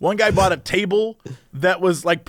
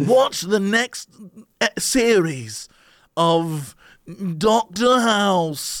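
nasal, plugged-nose put-on British TV announcer voice. Mocking how British TV announcers sound, speaker does a nasal British announcer voice. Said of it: "I've gotten the British announcer voice down".

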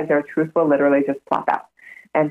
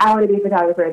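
mock thrilled, excited, gushing voice; 4 semitones higher than usual. Retelling how an excited person announced a new career: imitating someone excited. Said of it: "got so into it and was like".

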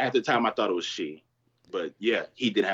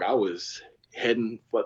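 plain

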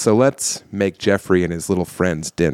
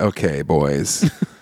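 seductive, sexy voice, lower pitch; 5 semitones lower than usual. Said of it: "Sexy voice".

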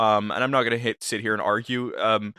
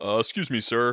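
deep low voice. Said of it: "I just have a deep voice".

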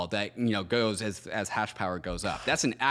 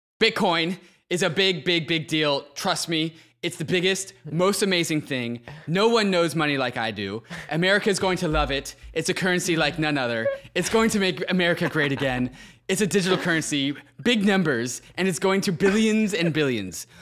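loud, pitched-up, belted bragging in rally-speech style; 8 semitones higher, 6 dB louder than usual. Reading an AI-written text about Bitcoin aloud: Donald Trump impression. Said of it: "my best Donald Trump i-, impression".

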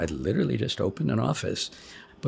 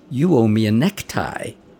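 very loud, booming, projected delivery; 8 dB louder than usual. Retelling the pediatrician's remark in a receiving line: imitating a very loud voice. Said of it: "in a very loud voice".

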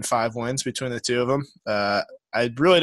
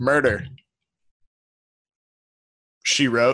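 clear pause held after the word murder. Recalling Pat Summerall's CBS promo, Pat Summerall pause after murder. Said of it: "He'd always pronounce the comma in murder, she wrote".

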